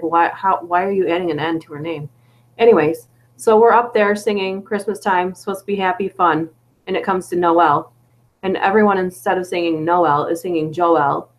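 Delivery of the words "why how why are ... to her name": put-on furious, angry outburst. Retelling how a brother reacted to a misspoken name: imitating a furious brother. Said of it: "which made my brother furious".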